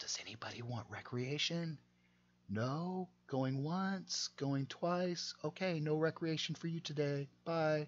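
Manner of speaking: barely-there, very low whispering voice. Retelling what they say when they come in at five a.m., whispering in a very low voice. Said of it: "They say it in a very low voice".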